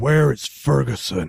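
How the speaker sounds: full, unleashed demonic voice, rough and creaky. A player's character questions the guards, in full demon voice. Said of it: "letting my full demon voice come out".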